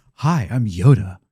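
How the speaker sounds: put-on deep handsome voice. Picturing young Yoda as tall and handsome: deep-voiced young Yoda. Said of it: "has a deep voice".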